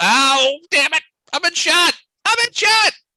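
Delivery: very loud pained shout, climbing high in pitch. Narrating a tabletop game, voicing a character who was just shot, yelling. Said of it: "He yells".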